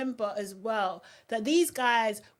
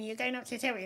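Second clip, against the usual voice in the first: mocking put-on voice, quieter and faster; 7 dB quieter than usual. Speaker quoting a man telling her to calm down, mocking imitation of him. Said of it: "it's the mocking voice as well".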